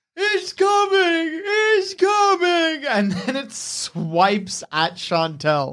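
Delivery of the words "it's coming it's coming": very high, frantic, panicked bear scream. A narrator voices the bear during an animal handling check: bear screaming in panic. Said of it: "You hear the bear screaming".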